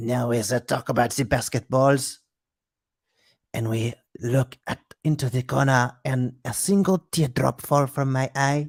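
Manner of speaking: slow, deliberate, affected put-on French woman voice. Imagining a skinny french woman smoking in an art house film: put-on french woman voice. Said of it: "she's gonna be like".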